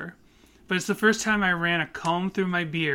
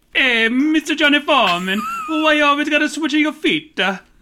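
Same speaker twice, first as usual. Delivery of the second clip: put-on Italian American accent, very loud, high; 9 semitones higher, 8 dB louder than usual. Joking with the other speaker, in an Italian American accent. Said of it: "can't do an Italian voice?".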